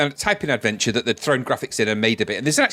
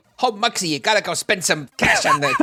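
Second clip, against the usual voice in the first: shifty, swooping put-on gangster voice; 6 semitones higher than usual. Describing a blocky gangster image in a game, doing a gangster voice. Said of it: "Is that how you heard his voice?".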